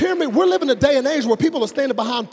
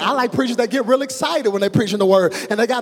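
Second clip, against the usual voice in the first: usual speaking voice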